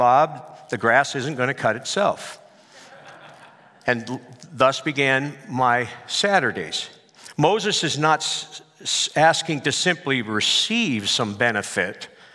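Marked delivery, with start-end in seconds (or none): none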